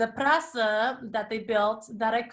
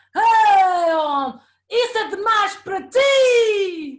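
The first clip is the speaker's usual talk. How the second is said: put-on booming, slow drunken yell, "ti" stretched; 9 semitones higher, 9 dB louder than usual. Retelling what a man at the event screamed in Portuguese: imitating a drunk man screaming. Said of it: "he screamed out loud in Portuguese".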